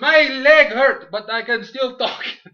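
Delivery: very high, very loud, slow put-on Mexican accent. Retelling a wrestling announcer's words: put-on Mexican accent. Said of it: "I like how I give him a Mexican accent".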